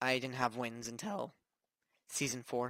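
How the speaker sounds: voice cracking and breaking mid-line on a word. Giving Fortnite advice about having no wins, with a voice crack. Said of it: "Sorry about that voice crack".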